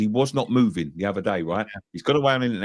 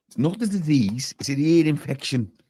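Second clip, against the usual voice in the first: put-on Liverpool Scouse accent, pitched up; 5 semitones higher than usual. Joking to the others about an ear infection: put-on scouse accent. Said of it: "was that supposed to be a Scouse accent?".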